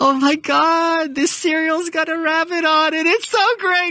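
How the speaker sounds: very high giddy tipsy voice, drawn-out "God". Describing a woman's three phases of wine mom, imitating a happy drunk wine mom. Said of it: "She's got happy drunk".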